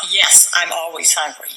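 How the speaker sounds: usual speaking voice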